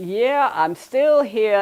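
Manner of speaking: put-on loud, slow, drawled Chicago gangster accent. Retelling a voice heard from the closet at four a.m., Sam Pick's loud Chicago accent. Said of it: "It was a Chicago accent".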